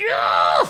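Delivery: loud, furious, riled-up chicken voice yell. Describing a statue of an angry chicken: imitating an angry chicken. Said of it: "a chicken going like".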